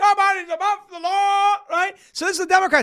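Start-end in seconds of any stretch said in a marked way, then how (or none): 0.0-1.6 screamed, crowing like a rooster. Mocking the Democrats as a rooster at four in the morning: imitating a screaming rooster. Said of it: "the neighbor's rooster starts screaming".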